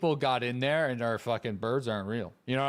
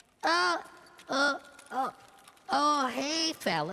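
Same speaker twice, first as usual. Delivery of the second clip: put-on soft, innocent boy voice, higher pitch; 13 semitones higher than usual. Trying a Butters voice after another player says it's hard. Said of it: "I don't think I could do a Butters voice".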